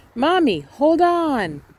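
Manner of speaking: loudest voice, shouting at the top of the lungs. Repeating a line after being asked for the loudest voice: loudest voice. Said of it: "Loudest voice".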